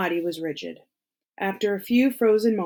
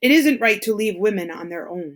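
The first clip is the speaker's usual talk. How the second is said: rough, gruff, almost threatening delivery; 4 dB louder than usual. Reading a man's line in a story: gruff, almost threatening. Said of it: "His voice was gruff, almost threatening".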